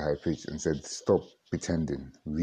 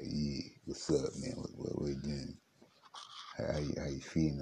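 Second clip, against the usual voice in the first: low, deeper voice, just broken; 8 dB quieter than usual.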